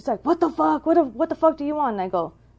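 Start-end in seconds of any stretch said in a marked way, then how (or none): 0.2-1.9 mock combative, high-pitched, aggressive, ready-to-fight outburst. Retelling a confused man's reaction on waking: imitating a man ready to fight. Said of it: "in this fighting thing".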